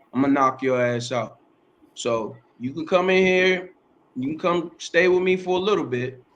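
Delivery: ordinary talk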